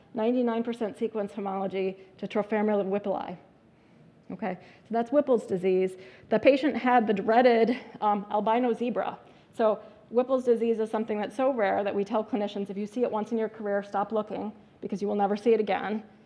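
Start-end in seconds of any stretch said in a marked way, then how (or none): none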